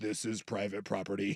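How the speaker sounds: very quiet, hushed, low automated AI voice. Chatting about a camera warning, imitating that ai voice. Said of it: "it's like that that A I voice".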